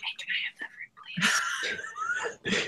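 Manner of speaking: slow, quiet whisper.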